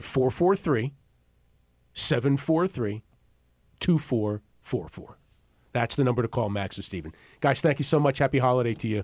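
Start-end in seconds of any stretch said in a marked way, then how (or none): 0.0-5.2 slow, deliberate, unhurried pace. Giving listeners the phone number to call, saying it nice and slow. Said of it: "I'm gonna say it nice and slow".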